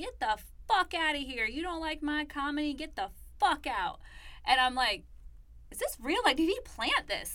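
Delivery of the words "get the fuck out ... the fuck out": heated screaming outburst with a light touch. Retelling a comedian screaming back at a woman being escorted out, imitating someone screaming. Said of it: "he's screaming back".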